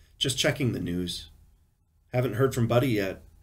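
plain reading voice

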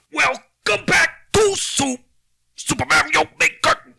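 very loud, very high, shrill swooping scream. Showing the others how a YouTuber opens his videos: Dashy yelling impression. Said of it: "He kinda yells and, and screams".

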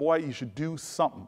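put-on half-angry tone. Retelling what a woman told him when he asked what to do: mock almost-angry. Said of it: "she looks at me almost angrily".

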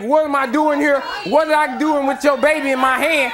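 ordinary talk, nothing marked

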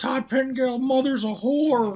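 put-on very high, drunken Texan accent screaming. Speaker describes a wrestling storyline, imitating Terry Funk's drunk Texan yelling. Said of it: "yelling and screaming like a fucking drunk Texan".

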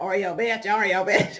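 low, repeated muttering under the breath. Retelling what a woman kept repeating as she walked away, mumbling. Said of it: "she just kept mumbling".

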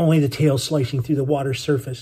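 ordinary delivery

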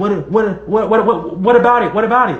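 mock nervous stammer. Retelling a nervous guy's reply to a simple question, imitating someone stuttering. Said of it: "He was stuttering like".

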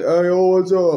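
affected put-on voice, loud, high. Complaining about a guy who roasted them from a fake account, mocking how he talks. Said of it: "he talks like".

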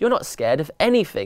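ordinary delivery

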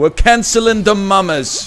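bad put-on Newfoundland accent. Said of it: "That's not a good impression".

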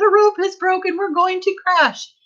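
very high, crying out in alarm. Narrator reads a passenger's line as the ride drops like a stone: cried out. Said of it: "Mrs. TV cried out".

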